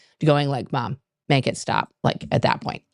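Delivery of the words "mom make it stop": put-on cringing, mortified, squirming, embarrassed child voice. Voicing kids cringing at their mom: imitating cringing embarrassed kids. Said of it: "these are my kids cringing at me".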